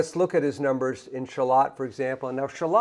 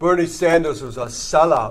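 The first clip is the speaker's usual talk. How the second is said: put-on loud, local New York accent; 2 semitones higher, 6 dB louder than usual. Quoting what the original Liberty Union guy used to say: imitating Peter Diamondstone's New York accent. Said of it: "a New Yorker who talked like this".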